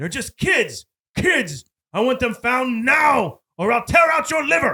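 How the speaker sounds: furious villain yell. Recapping a movie scene, the speaker imitates Snyder angry, talking to Brown. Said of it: "Snyder like is angry".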